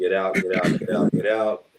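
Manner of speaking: plain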